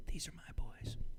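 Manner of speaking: acted small child whisper. Speaker quoting a two-year-old girl keeping the boys in line, whispering like a toddler. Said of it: "She kind of whispers it".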